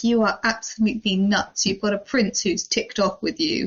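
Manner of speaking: ordinary talk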